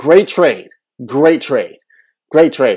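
very loud, repeated sarcastic delivery. Mocking a trade the speaker was disgusted by: sarcastic. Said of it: "I was being sarcastic on the Porzingis trade".

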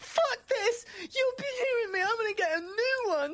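very high, hushed, flustered bit of panic. Voicing a character whose hand was just cut off: panicked. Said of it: "he kind of panics a little bit and goes".

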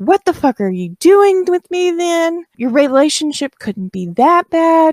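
mock very high-pitched, freaked-out screaming outburst. Retelling a couple's fight, speaker acts out a woman screaming at him. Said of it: "she is screaming all of these words at him".

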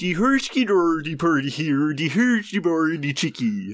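put-on Swedish-sounding nonsense gibberish talk. Trying a Muppets impression for a bonus point, Swedish Chef impression. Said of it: "If there's an impression of any Muppets character".

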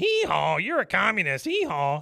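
braying, swooping, drawn-out donkey puppet voice. Retelling an episode where the donkey puppet speaks: imitating a donkey puppet. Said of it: "the donkey puppet comes up and he goes".

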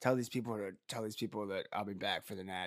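soft, hushed half-whispered aside. Retelling what an injured player said leaving the game: imitating a half-whisper. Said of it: "he just whispers".

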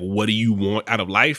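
ordinary delivery

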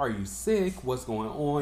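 ordinary talk

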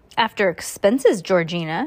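ordinary delivery, nothing marked

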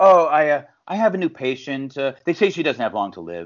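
mock, completely nonchalant, totally casual delivery. Quoting the wife's line in the movie to her husband: imitating a completely nonchalant line. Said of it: "completely nonchalant".

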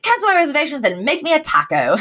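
put-on lilting British accent. Retelling a funny scene, the speaker quotes a man's line in a British accent. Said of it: "taco with the British accent is taco".

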